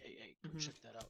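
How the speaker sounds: soft, hushed half-whispered aside. Half-whispering an order to a small creature to go check something: half-whispering in character. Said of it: "just whisper to him a little thing".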